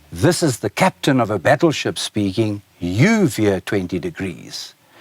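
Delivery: ordinary talk, nothing marked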